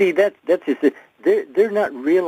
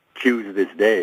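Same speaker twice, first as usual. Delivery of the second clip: plain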